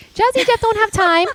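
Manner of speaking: mocking, teasing, high, loud, laughing.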